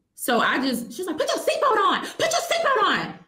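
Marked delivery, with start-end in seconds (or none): 1.2-3.1 play-acted, shrill, very high, swooping, top-of-lungs yelling. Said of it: "to the top of her lungs".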